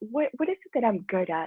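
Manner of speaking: ordinary talk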